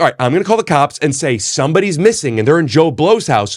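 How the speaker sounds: usual speaking voice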